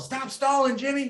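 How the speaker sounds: high, loud mock coach yell.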